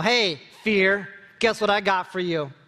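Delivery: cheeky, taunting, sassy, defiant attitude. Showing how to declare truths to fear: saying it with attitude. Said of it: "say it with a little bit of attitude".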